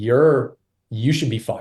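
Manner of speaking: playful mock outrage, joking tone. Recalling answering a dissenting colleague, retelling a joking rebuke. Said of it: "like jokingly".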